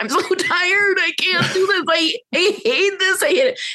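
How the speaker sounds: very high, acted-out sobbing through the words. Recalling how things went months later, the speaker acts out their past self crying. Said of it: "I'm like crying".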